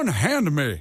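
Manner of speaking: cartoonish Southern accent, laid on heavily. Showing the others a Foghorn Leghorn Southern accent. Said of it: "I'm doing a Foghorn Leghorn, like, a Southern accent".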